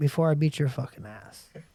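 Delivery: mock calm, even delivery. Retelling telling an angry man to get out of his face: imitating own calm threat. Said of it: "And this is how calmly I was".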